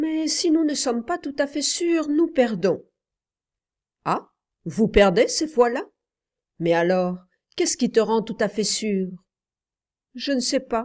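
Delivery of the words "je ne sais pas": embarrassed, abashed, higher pitched. Narrator reading a child answering his uncle, embarrassed. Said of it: "dit l'enfant tout gêné".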